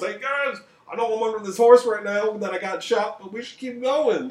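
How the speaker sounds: very high, loud shouted yell. Retelling a battle story, voicing a leader pinned under his horse, imitating a leader yelling. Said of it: "just like yelling at them from under his horse".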